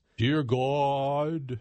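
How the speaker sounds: high, put-on pious prayer voice, "God" stretched. Mocking how people pray in prayer groups, in a drawn-out pious prayer voice. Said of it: "put on their prayer voice".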